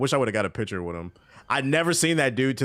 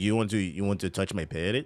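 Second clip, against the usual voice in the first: put-on Mexican accent in English; 3 dB quieter than usual. Retelling a stranger on the street with a parrot, in a Mexican accent. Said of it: "that's why I'm doing this accent".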